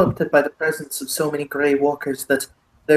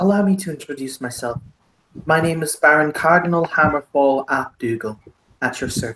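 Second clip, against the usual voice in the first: thick, heavily laid-on, put-on Irish accent. Voicing the character Cardlin introducing himself, in Cardlin's thick Irish accent. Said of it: "Cardlin has the thickest Irish accent I can physically put on".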